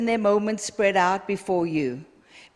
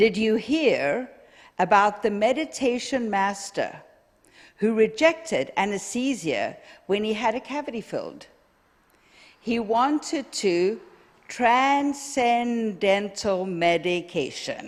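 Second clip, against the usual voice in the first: unhurried, slow, careful, deliberate reading. Speaker reading a joke aloud to the audience: reading slowly. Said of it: "I'm going to read it slowly".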